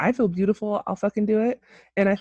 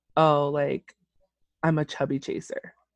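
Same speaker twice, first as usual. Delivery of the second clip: plain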